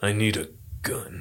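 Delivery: very slow, hushed, somber, calm, first word drawn out. Imitating an actor's calm, somber way of talking. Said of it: "Keanu Reeves always talks like that".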